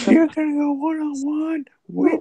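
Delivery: very high, loud match announcer voice. Announcing a wrestling match: Stephanie McMahon voice. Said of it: "you're doing her voice".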